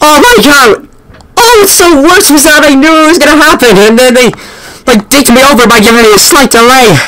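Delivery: shaken, jittery babbling. Reacting in a game right after a jump scare, shaken. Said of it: "I'm shaking a little bit".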